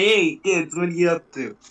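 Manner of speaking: ape character voice. Pitching a podcast character to the co-host: Uncle Donnie the Ape voice. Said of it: "doing a character on the podcast that's like Uncle Donnie the Ape".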